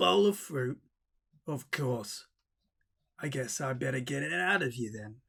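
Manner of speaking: ghostly growl running through every word. A ghost answers Natalie and Vegemite, who say there are no diamonds; growling ghost. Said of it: "growled the ghost".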